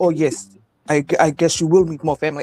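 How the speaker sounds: put-on Nigerian accent throughout. Retelling a joke from the episode: Nephew Tommy doing a Nigerian accent. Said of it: "do the Nigerian accent on him like that".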